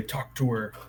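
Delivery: hushed, soft half-whisper in a put-on character voice. Half-whispering in character to Horace during a tense standoff: half-whispering in character. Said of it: "whisper into Horace's ear and say".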